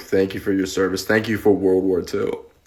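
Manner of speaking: play-acted, straight-faced, solemn, earnest, dead-serious tone. Retelling how older strangers abroad thanked them: imitating a dead-serious thank-you. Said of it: "And dead straight, they'd look at you".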